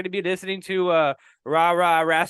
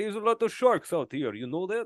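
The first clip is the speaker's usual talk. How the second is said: put-on Russian cosmonaut accent; 6 dB quieter than usual. Describing cosmonauts making shark hybrids, copying how everybody there talks: fake russian accent. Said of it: "everybody talks like this".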